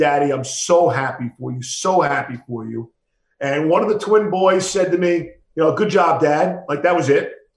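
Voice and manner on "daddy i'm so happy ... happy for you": put-on tearful, joyful crying. Quoting his daughter's reaction to his new job, imitating her joyful crying. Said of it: "she got hysterical crying".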